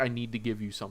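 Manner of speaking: put-on almost-in-tears, tearful voice. Retelling a newer player's plea to give something back: imitating someone almost in tears. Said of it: "almost in tears of".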